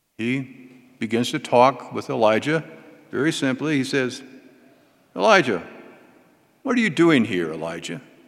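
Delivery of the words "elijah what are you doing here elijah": mock-astonished, wondering, swooping surprised tone. Retelling the Lord asking Elijah why he is there: acting surprised. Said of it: "Like he's surprised".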